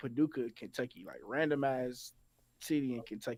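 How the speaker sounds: ordinary talk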